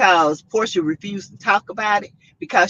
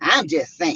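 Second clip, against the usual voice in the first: sassy, attitude-filled voice; 4 semitones lower than usual. Mid-conversation, repeating a phrase in their own sassy voice. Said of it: "in my sassy voice".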